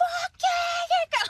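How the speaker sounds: very high-pitched, loud shriek. Retelling how she screamed when the door was opened, retelling her scream. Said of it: "she's like screaming".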